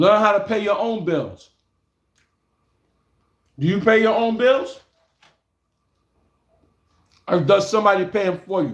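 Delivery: speaking while chewing, mouth full. Speaker lectures viewers while eating something bought earlier, talking with mouth full. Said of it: "I'm eating this".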